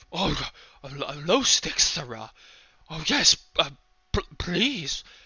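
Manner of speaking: cowering, nervous, stammering hunchback voice. Voicing a hunchback who cowers away from a stranger: cowering, nervous hunchback voice. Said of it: "kinda cowers away".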